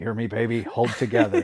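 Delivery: put-on mutter under breath. Speaker quoting a character's line said to himself, retelling a mutter under breath. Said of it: "under his breath saying".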